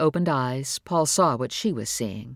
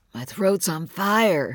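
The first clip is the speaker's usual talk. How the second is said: slow, deliberately roughened, put-on sick voice; 3 semitones higher than usual. A child told to get up for school protests, deliberately rough fake-sick voice. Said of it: "making his voice as rough as possible".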